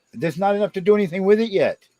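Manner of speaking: yelling. Answering another speaker who keeps telling them to comb their hair: yelling. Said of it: "quit yelling at me".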